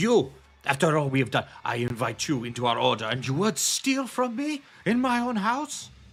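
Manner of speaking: all-out, enraged, high, climbing furious scream. Voicing an angry host caught by a theft: screaming in anger. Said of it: "just starts screaming".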